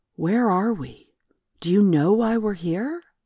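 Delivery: deliberately level, forced steady, controlled voice. Gaia questions twelve-year-old Emily, trying to keep her voice steady. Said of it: "Gaia tried to keep her voice steady".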